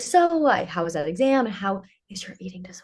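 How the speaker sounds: gentle, tiptoeing delivery. Speaker recalling how mom spoke when asking about mental health, imitating mom's changed tone. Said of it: "change the, her tone of voice".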